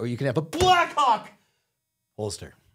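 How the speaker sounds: loud, swooping, advertisement announcer-style yelling. Speaker pictures selling holsters at their future gun shop, acting out a yell. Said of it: "why are you yelling".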